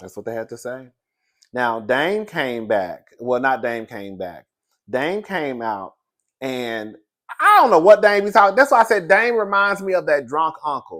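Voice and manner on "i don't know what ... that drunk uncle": shrill, very loud, high-pitched in-your-face rant. Talking to the audience about Dame: talking loud. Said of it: "I don't know why I'm talking so loud".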